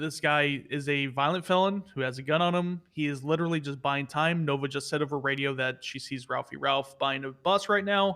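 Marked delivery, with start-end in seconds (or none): none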